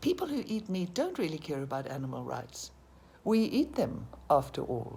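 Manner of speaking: heavy stress on "we" at the start.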